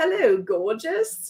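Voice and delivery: playful, amateur put-on British accent. The speaker imagines british friends saying the line, in a british accent. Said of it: "my British friends saying that in their accent".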